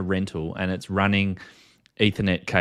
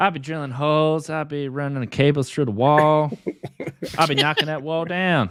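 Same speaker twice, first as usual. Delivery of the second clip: bad, high, very slow put-on American accent; 8 semitones higher than usual. Asked by others to do it again, bad put-on American accent. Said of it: "his American accent when he does that".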